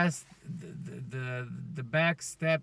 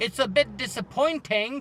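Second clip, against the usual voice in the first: failed put-on German accent, higher pitch; 7 semitones higher, 4 dB louder than usual. Imitating Helmut Marko reacting to a driver: bad German accent as Helmut Marko. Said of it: "That's not a German accent as well".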